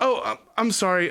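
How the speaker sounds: sheepish, flustered, embarrassed, stammering, tripping over words. A female rabbit wrapped in blankets apologizes to someone walking in, embarrassed. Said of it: "She gets kind of embarrassed".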